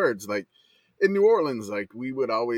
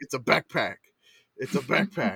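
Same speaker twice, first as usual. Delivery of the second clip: put-on annoyed, angry child voice. Retelling a kid's angry correction of a word: imitating an annoyed kid. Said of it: "he gets mad at me every time I say that".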